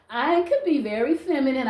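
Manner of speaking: ordinary talk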